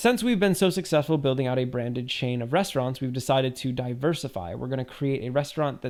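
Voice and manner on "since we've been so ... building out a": plain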